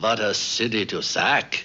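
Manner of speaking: put-on guttural German accent. Retelling what a visitor said looking over London, in a guttural German voice. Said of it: "he said in his guttural German voice".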